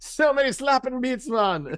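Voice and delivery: bad, very high Jamaican accent drifting into Irish. Co-host riffs on an old studio catchphrase: bad jamaican accent, sounds irish. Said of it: "Is that Irish or Jamaican?".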